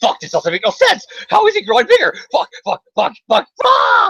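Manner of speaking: mock frantic freak-out, very high-pitched and rising. Acting out a comic-book character in a hallway: freaking out. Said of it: "I just imagine him freaking out in the hallway".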